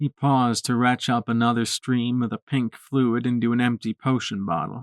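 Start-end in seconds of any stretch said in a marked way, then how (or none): none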